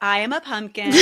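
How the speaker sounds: normal talking voice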